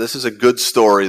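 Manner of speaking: heavy stress on the word good.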